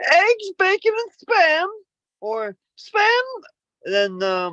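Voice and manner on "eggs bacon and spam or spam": silly put-on vape voice, very high and slow. Reading out poll answers about spam, in a put-on vape voice. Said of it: "I'll do the voice. I'll try to do the vape voice".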